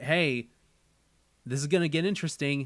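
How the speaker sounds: plain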